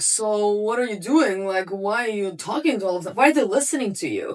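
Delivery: put-on drunken voice. Speaker retells a neighbor questioning them from a nearby balcony, imitating a drunk neighbor. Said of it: "he's clearly very drunk".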